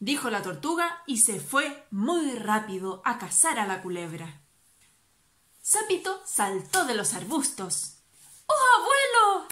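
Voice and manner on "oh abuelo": shrill, very high, loud shout. A character jumps out of the bushes to his grandfather; shouting. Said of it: "le gritó".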